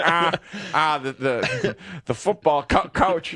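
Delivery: odd mouth-shaped character voice, slow, halting, stumbling start. Trying a voice for an intro after admitting not being a voice actor: Wani voice. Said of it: "but I can do Wani".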